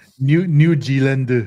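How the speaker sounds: "New Zealand" pronounced with a Korean accent. Showing how Koreans would pronounce a place name, Korean accent on New Zealand. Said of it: "would be how they would pronounce it".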